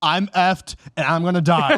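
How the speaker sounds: put-on sardonic, sarcastic delivery. Quoting the book character's daily log reports: retelling a sarcastic log entry. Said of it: "it's so sarcastic".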